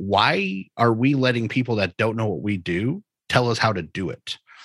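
ordinary talk

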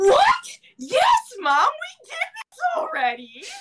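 cracking, breaking voice. Retelling an answer to Mom's question, imitating own voice cracking. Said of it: "my voice cracking that much".

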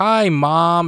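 loud, pointed voice. Retelling how a man greets his mother on the phone so others know, very loud. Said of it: "very loudly".

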